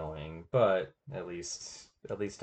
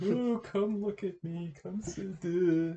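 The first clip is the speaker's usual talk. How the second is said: fake emo attention-seeking pleading voice, higher in pitch; 13 semitones higher than usual. Retelling own old sad social media posts: mock emo attention-seeking voice. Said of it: "some kind of emo-y attention-seeking thing".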